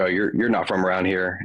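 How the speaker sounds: usual speaking voice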